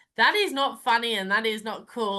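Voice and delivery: ordinary talk, nothing marked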